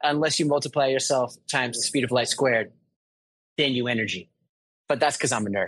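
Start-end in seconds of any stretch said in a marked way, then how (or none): none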